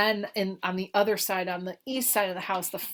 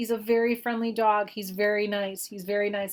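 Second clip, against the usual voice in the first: ordinary delivery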